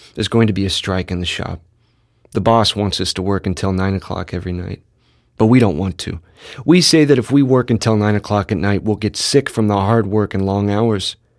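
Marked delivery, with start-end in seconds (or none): none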